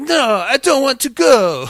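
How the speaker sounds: very slow, high, exaggerated bad Italian accent. Retelling a show scene where men in suits grab Aura, voicing her in a bad Italian accent. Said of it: "my Italian accent sucks".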